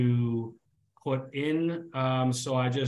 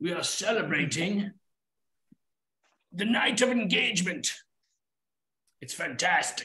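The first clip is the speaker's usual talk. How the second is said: put-on very old elf voice, higher pitch; 5 semitones higher than usual. Voicing a very old elf who greets the travelers: voicing a very old elf. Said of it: "he says".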